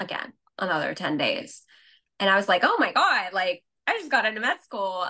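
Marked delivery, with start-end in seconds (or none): 2.6-5.0 giddy, disbelieving freak-out with swooping pitch. Retelling reading an acceptance email: retelling freaking out. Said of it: "freaking out".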